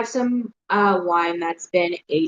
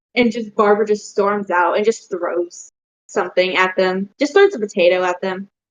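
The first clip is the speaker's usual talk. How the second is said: ordinary delivery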